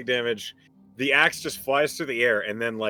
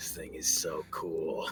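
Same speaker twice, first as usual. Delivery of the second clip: whispering in a character voice; 8 semitones lower, 14 dB quieter than usual. Voicing a player character after a kill with a thrown axe: whispering in character. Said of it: "he just whispers".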